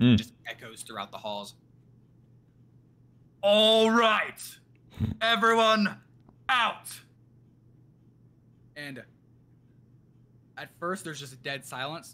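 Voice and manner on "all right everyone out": very high, very slow, booming, drawn-out megaphone call. Retelling him clearing everyone out of the school, in a booming megaphone voice. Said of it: "it just becomes like a booming, like megaphone type voice".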